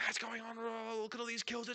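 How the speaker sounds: put-on hyped yelling caster. A caster mocks how other casters hit you, imitating a yelling caster. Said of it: "so many casters just like hitting you with this".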